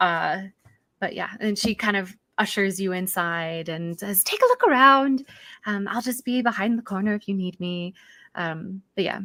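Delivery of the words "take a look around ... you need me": frazzled, flustered, welcoming elf voice. Voicing a gnomish woman answering a knock at her store: new voice for Carmen. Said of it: "get ready for a new voice".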